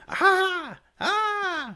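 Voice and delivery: very high, loud screaming in pain. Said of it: "He's, like, screaming".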